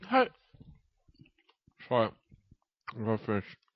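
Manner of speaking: speaking with mouth full of food, chewing. A speaker eating a summer roll on the podcast takes a turn, talking with mouth full. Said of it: "He's eating a summer roll".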